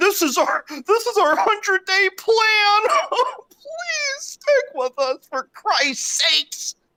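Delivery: very high, whiny, blubbering fake crying. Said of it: "crying, saying".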